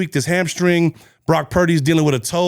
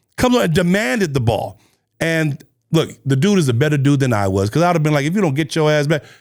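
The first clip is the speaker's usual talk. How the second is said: ordinary talk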